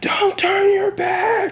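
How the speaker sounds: very high, frantic, acted-out scream. Retelling how a fighter's corner reacted when he turned away: imitating a corner screaming. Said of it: "Tony's corner screaming".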